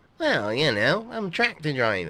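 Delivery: very loud, high-pitched, lazy farmhand voice. Accused of never doing anything, the farmhand character replies in a lazy farmhand voice. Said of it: "Your laziness is going to get you into trouble soon. ... Aye. Fixing me truck".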